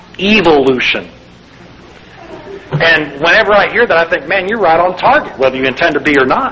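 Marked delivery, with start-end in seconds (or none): 0.2-1.1 put-on evolution pronounced with an Australian accent. Showing how Australians pronounce a word: Australian accent on evolution. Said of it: "Have you heard how they pronounce the word evolution?".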